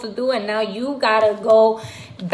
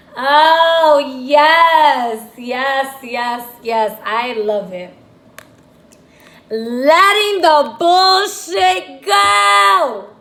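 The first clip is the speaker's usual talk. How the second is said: very slow, swooping, loud, drawn-out, joyful excited yell; 4 semitones higher, 6 dB louder than usual. Reacting to a tarot card just pulled: excited yelling. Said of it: "I just yelled at y'all".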